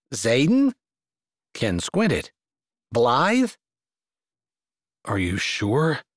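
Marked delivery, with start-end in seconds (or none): 5.0-6.0 barely audible low murmur under the breath. As she begs him to leave, he answers her, barely audible. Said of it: "his voice barely audible".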